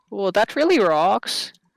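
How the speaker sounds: put-on slipping into a Canadian accent. A player in character makes a remark as the accent slips: slipped into Canadian accent. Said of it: "I've gone Canadian again".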